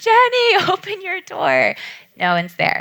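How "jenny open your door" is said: very high, slow, drawn-out, swooping sing-song shout. Recalling banging on Jenny's gate at Christmas with no one there, retelling a yell. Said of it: "And I'm yelling".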